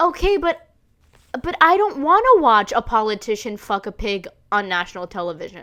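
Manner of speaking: ordinary talk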